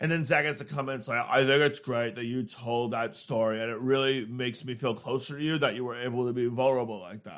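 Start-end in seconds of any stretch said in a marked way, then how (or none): 1.3-7.4 sarcastic, mocking put-on earnest guy voice. Podcast host mimics how Zach comments on a vulnerable story: mocking DJ Zach voice. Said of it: "this is DJ Zach voice".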